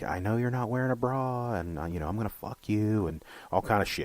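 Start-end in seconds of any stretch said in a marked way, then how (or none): 0.0-3.1 unhinged, crazy voice. Retelling a harassing phone call a woman got after walking home: imitating a caller's crazy voice. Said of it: "he's got this crazy voice".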